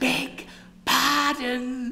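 very high, little half-whisper. Noticing the woman she addressed has her eyes closed, she apologises, half-whispered. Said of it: "whispered Miss Armstrong".

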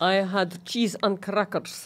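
put-on Eastern European accent. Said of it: "Please say you're putting on an accent".

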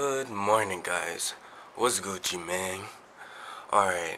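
groggy, fresh-out-of-bed morning voice. Speaker greets viewers in the morning, in a just-woke-up voice. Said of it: "as you can probably tell from my voice, I just woke up".

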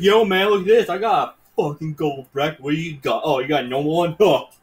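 smug, taunting, bragging toxic gamer voice. Imitating a toxic player showing off his gold gun: mocking impression of a jerk. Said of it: "my impression of a fucking asshole".

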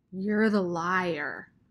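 icy, dark-toned, cold, with liar drawn out. Sistine answers Rob, who called her father a liar, in a dark, cold voice. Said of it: "said Sistine in a dark, cold voice".

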